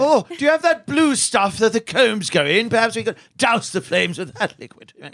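put-on English accent, high and swooping. Improvising a barbershop scene, reporting a fire: British accent. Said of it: "why are you doing my character?".

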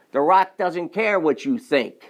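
loud, boastful voice. Speaker acts out what The Rock would say, with The Rock's raised voice. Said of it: "He'd raise his voice".

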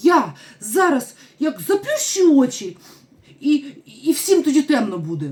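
desperate, high, loud despairing outburst. Little Stella cries out in despair: exclaiming in despair. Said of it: "відчаї вигукнула".

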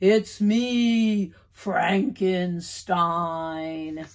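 deepest spooky monster voice, drawn-out "me". A boy in costume answers his father's question in his deepest, spookiest voice. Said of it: "In his deepest, spookiest voice".

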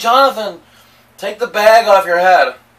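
shrill, very loud scream. Retelling a sister walking in on a bag game: imitating sister screaming. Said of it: "started screaming".

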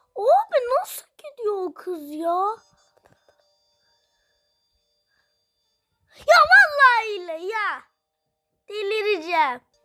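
loud, frustrated, exasperated yelling outburst. Streamer in a race game, about a girl ahead: shouting in frustration. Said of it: "orada biraz fazla bağırdım galiba".

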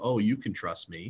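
voice dropped low. Speaker demonstrating a line to strangers, voice lowered a couple octaves. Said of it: "I can even lower my voice a couple octaves when I say it".

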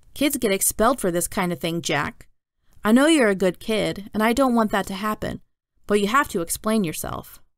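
ordinary delivery

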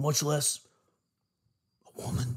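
hushed, breathy whisper spoken to the side. Asking Rogan a question, finishing the last part whispering. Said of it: "I gotta whisper that part".

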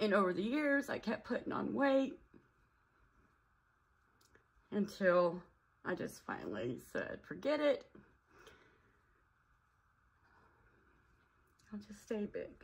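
tearful. Speaker tells of weight gain after a hysterectomy, trying not to cry; crying. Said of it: "I'm sorry, I'm crying".

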